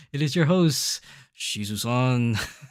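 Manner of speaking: slow, grand, drawn-out robot villain voice. Recalling how he announced himself as the host: Unicron voice. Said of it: "I gotta say it like Unicron".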